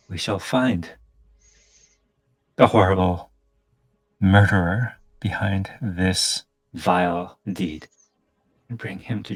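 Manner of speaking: seething, speaking through gritted, clenched teeth. Storyteller voicing a seething woman's reply, through gritted teeth. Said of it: "she says almost through gritted teeth".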